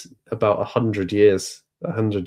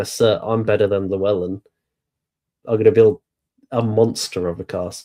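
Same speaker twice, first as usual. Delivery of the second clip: ordinary delivery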